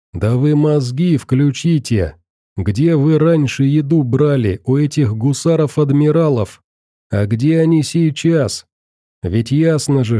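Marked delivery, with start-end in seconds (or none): none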